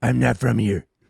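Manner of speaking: put-on gruff superhero voice. Answering whether Batman can speak French, in a Batman voice. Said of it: "Oh, Batman's back".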